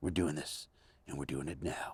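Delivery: very low, hushed, soft, intense voice.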